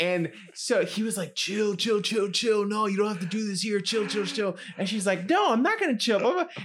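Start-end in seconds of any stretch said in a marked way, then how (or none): 5.3-6.5 mock yelling, much higher. Retelling a fight after a breakup, the woman answering him: retelling an angry yell. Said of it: "they were yelling at each other".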